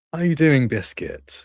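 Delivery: practiced, fake-nice, high customer service voice. Retelling turning to greet someone, with a put-on customer service smile. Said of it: "put on my best customer service smile".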